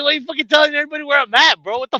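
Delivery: mock mad, accusing, complaining tone. Acting out how the listener got mad about a revealed location, imitating someone angry. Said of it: "You got mad".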